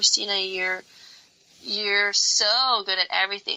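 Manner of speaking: condescending, patronizing, talking-down tone. Recalling what she would always hear from others, in a mock-condescending tone. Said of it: "like kind of like in a condescending tone".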